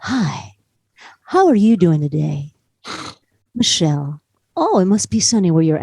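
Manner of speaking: low, chatty, casual voice. Speaker imitates a man chatting with a customer service agent, prank-call voice. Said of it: "you sound like a prank call".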